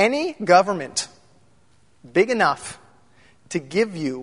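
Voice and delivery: very slow, halting, word-by-word pacing. Speaker quotes a line to his audience, saying it very slowly. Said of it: "I'm going to say it slow".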